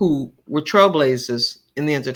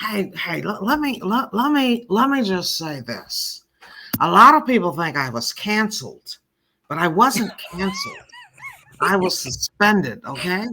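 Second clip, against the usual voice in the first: animated, pitched-up voice with a swinging tune; 5 semitones higher than usual. Addressing the listening audience, doing a go-to Whoopi impression. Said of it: "That's Whoopi has for years been my favorite go-to impression".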